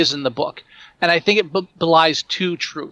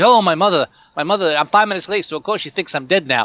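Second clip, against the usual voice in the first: put-on cliché New Jersey accent. Mocking cliche characters in the movie: cliche New Jersey accent. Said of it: "everybody talking like the Jersey".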